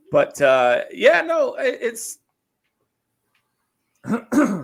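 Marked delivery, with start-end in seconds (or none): 0.9-2.1 high, loud, cracking voice. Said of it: "lost my voice there for a minute".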